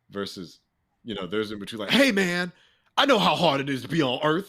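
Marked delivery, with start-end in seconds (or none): 1.9-4.4 aggressive, very loud, shrill, high-pitched tone. Demonstrating vocal intonation to a listener, say it in an aggressive tone.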